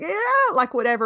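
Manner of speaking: mock angst-filled yell, loud and high. Describing a Saturday Night Live sketch, the speaker acts out the yell: retelling the Grinch yelling. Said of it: "he yells out really loud".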